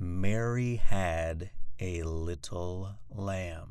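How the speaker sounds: very slow, low, boring monotone drone. Modeling a practice line for listeners to copy: boring monotone. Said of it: "in my boring monotone voice".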